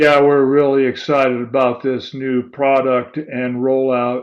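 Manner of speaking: bored, flat, totally uninterested monotone. Example call line about a new product rollout, bored, flat tone. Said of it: "my tone was showing you or telling you that I'm extremely bored with the whole thing".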